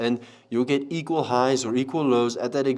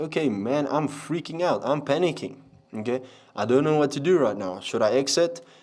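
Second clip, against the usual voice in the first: ordinary delivery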